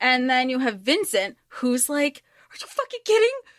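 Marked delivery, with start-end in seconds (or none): 2.5-3.4 high-pitched frantic freaking out. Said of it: "that he's freaking out over".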